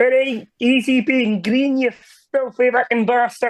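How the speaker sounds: Scottish frog puppet voice. Asked by another speaker to try it, speaker attempts Scottish Kermit the Frog voice. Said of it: "You refused to do Scottish Kermit the Frog".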